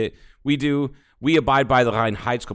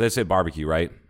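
ordinary delivery

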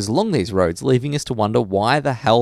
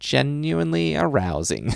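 put-on soft, crackly, creaky little old lady voice; 3 semitones higher, 6 dB quieter than usual. Retelling how you quoted a Simpsons joke, say it in your best old lady voice. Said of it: "in my best old lady voice said".

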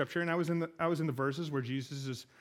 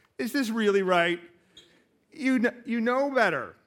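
mocking, doubtful, loud, high-pitched sarcastic tone; 7 semitones higher, 8 dB louder than usual. Retelling how others question a decision, imitating a sarcastic question. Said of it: "with the sarcastic way that I would".

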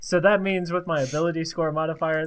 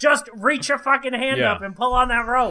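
put-on Boston accent, pitched up; 8 semitones higher, 3 dB louder than usual. Tabletop player speaking in character, in a boston accent. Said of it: "Why did he become like a Bostonian?".

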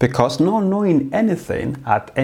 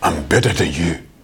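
mock, put-on Nigerian accent; 9 semitones lower than usual. Explaining what arrogant people are really saying, voicing them: Nigerian accent. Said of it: "That's my Nigerian accent".

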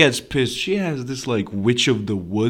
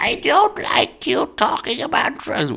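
put-on old-lady voice pitched very high. Quoting a woman who objects to talk of drugs, imitating her old-lady voice. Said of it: "I know she sounds like an old lady".

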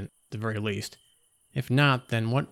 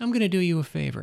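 gentle, soft cooing voice; 7 semitones higher than usual. Narrator reads her line as she takes another step forward, cooing. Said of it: "she cooed".

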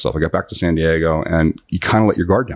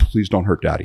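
mock crying little girl's tearful voice. Retelling how a little girl in the car pleaded: imitating a crying little girl. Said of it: "She's crying".

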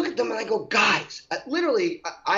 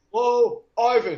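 mechanical, machine-like, computerized robot voice; 4 dB louder than usual. Describing a store greeting a customer, in a computerized voice. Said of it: "like in a computerized voice".

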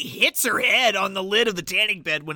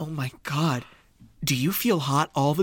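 mock horrified voice, lower; 5 semitones lower than usual. Retelling a movie scene: horrified Nora impression. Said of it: "in horror".

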